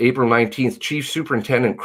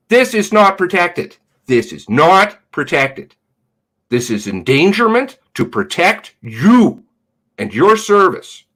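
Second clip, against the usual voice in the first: voice raised in distress, upset, pitched high; 5 semitones higher, 4 dB louder than usual. Speaker making a point to the listener, in a raised, upset voice. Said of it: "Sorry if I'm raising my voice".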